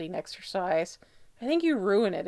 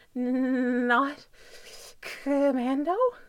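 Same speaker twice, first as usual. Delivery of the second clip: chattering teeth mangling words, much higher; 5 semitones higher than usual. Styles answers Derek after Derek strips to his boxers; words mangled by chattering teeth. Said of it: "the words are mangled by his chattering teeth".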